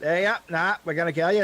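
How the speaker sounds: put-on goblin accent. Demonstrating to the others what the goblin accent sounds like. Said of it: "that is the goblin accent".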